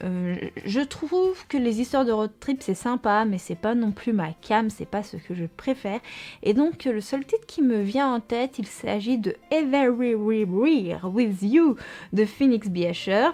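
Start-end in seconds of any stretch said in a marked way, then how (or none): 9.5-13.3 bad, slow, very French accent. Naming the one book title that comes to mind, with a bad English accent. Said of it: "mon accent anglais, qui est vraiment catastrophique".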